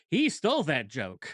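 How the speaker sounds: ordinary talk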